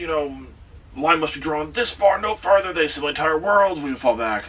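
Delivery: enraged, angry, high-pitched screaming outburst. Retelling a scene where Picard breaks his model ships: Picard screaming in anger. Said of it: "he's screaming like".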